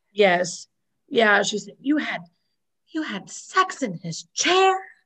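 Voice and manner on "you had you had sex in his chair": high, blurted exclamation, loud for everyone to hear. Retelling a scene where Monica repeats it aloud: imitating a loud exclamation. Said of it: "Monica repeats that really loud".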